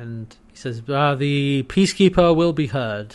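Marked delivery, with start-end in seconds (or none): 1.2-3.1 mock stuffy, pompous, officious voice. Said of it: "they're very, like, officious and, and, you know, stuffy and pomp-".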